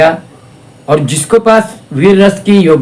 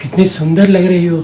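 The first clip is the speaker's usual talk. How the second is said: affectionate, tender, loving delivery; 3 dB quieter than usual. Showing how a romantic dialogue sounds said with love: tender, loving delivery. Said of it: "मैं आपको प्यार से बोल के दिखा रहा हूँ".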